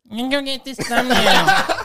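high, loud, mocking parroting tone with a laugh.

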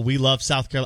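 ordinary delivery

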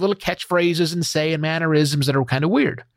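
normal talking voice

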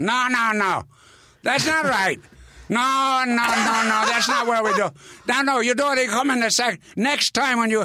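mock very high, angry, scolding yelling. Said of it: "And he's yelling at [name]".

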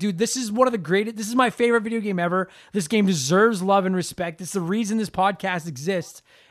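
normal talking voice

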